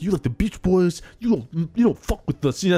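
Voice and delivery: put-on Brooklyn accent. Describing how someone talks, doing a brooklyn accent. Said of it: "He has like a Brooklyn accent".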